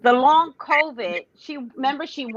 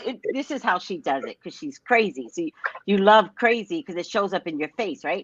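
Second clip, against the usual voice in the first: plain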